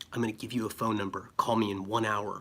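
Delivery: hushed, secretive, conspiratorial half-whisper. Retelling how the woman the speaker approached answered, all half-whispering it. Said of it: "all whispering it".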